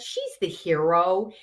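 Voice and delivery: plain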